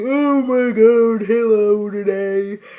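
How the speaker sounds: weird voice, very slow and stretched out. Imitating a teacher's voice that drives the speaker nuts: imitating Miss Smith's weird voice. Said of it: "She does that weird voice".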